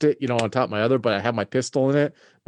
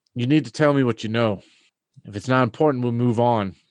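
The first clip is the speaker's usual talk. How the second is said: understated, pressing, subtle menacing intimidation. Interrogating a nervous man in character, leaning forward: subtle intimidation. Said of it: "looking at him intently".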